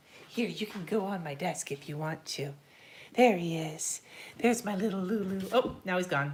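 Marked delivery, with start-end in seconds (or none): 3.1-5.4 creepy cat-talk voice. Coaxing the cat Lulu onto the desk, in a creepy kitty voice. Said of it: "Creepy kitty voice".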